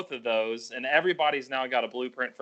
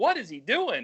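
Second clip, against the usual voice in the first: high-pitched, half-shouting near-yell; 8 semitones higher than usual. Retelling watching a race on tv: retelling almost yelling at the tv. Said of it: "I almost yelling at the T V".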